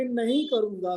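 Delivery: stress on नहीं. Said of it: "अभी".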